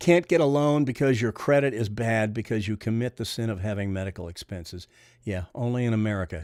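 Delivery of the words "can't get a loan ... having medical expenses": ordinary delivery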